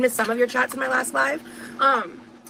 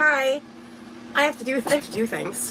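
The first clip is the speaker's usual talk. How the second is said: mock unenthusiastic, reluctant-sounding delivery. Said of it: "so I'm like".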